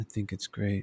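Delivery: put-on deadpan delivery. Retelling what a man said after the music stopped, retelling a deadpan line. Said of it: "So deadpan".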